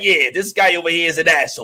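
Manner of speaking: put-on New Jersey accent. Describing a man who unexpectedly had a New Jersey accent, doing Kamal's New Jersey accent. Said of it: "have like a New Jersey accent".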